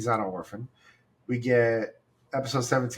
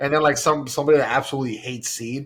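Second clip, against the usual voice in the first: ordinary talk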